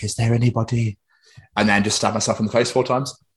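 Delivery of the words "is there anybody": eerie, spooky, creepy horror-movie style delivery. Showing how a horror-movie monologue would go: creepy horror-movie delivery. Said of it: "look around really creepily".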